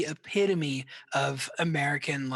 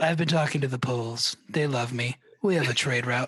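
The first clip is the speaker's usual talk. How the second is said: voice like an antique gramophone record. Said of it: "that is a great J Q A impression".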